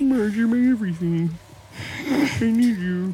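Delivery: high, slow, sad put-on whimpering voice. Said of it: "Homer Simpson, just, like, really sad".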